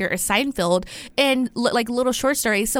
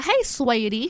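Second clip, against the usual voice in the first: friendly, put-on country accent. Suggesting how to pronounce a girl's name, in a country accent. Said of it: "like a country accent".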